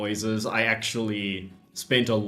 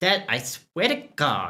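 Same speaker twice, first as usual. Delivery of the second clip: put-on high, swooping valley-girl voice; 5 semitones higher than usual. Voicing the game's daughter waking her dad: Amanda as a valley girl. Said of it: "Amanda's now going to be a valley girl".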